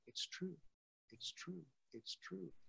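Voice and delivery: faint, hushed whisper. Retelling a voice heard near the end, whispering a remembered voice. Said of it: "I'm whispering because that's how it sounded".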